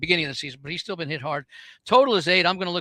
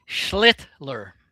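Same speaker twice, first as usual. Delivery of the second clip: schlittler, very slow, each sound stretched out; 3 semitones lower than usual. Saying a Yankees kid's name carefully: very slow Schlittler. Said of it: "say it very slowly".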